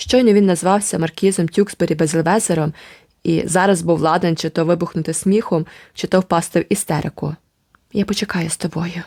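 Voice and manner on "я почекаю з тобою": whispering, quieter. The narrator speaks to a companion close to laughter or hysterics; whispered. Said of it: "прошепотіла я".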